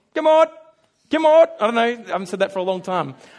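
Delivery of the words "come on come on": very loud, high calling yell. Retelling calling sheep in from the back paddock: imitating yelling to sheep. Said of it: "you just start yelling".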